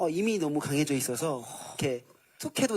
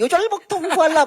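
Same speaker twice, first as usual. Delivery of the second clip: high-pitched voice, much higher and louder; 11 dB louder than usual. Asked to say the line again in a high tone, high-pitched. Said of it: "하이톤".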